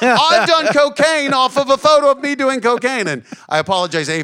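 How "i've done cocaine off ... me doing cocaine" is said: bad put-on Australian accent, higher and louder. Retelling a comedian's stand-up bit: awful Australian accent as Jim Jefferies. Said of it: "my awful Australian accent for doing Jim's bit".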